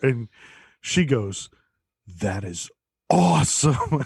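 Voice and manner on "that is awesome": put-on little girl voice, thrilled and gushing with delight. Retelling a girl's reaction to learning she is adopted: imitating her excitement. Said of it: "all excited about it".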